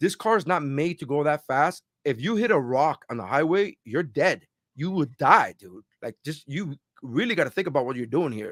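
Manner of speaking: sincere, heartfelt, earnest tone. Retelling what a cop said after a speeding stop: imitating a sincere cop. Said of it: "he looked at me with all sincerity".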